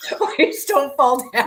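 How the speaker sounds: laughing through the words. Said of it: "I can't stop laughing".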